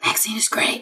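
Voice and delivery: secretive, hushed, barely voiced whisper under the breath. A player suggests how Scar would give the code word, whispered under the breath. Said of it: "just whisper it under".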